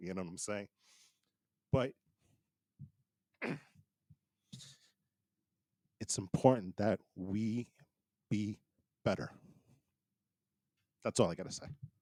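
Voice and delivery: choked up, emotional voice. Talking about hearing of a new president-elect, getting emotional. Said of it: "I'm getting emotional right now".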